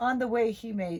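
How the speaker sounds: plain reading voice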